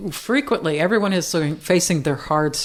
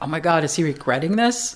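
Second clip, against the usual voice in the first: normal talking voice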